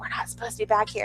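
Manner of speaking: speaking in a whisper. Retelling sneaking behind the scenes with Michael, whispering. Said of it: "the whole time I'm whispering".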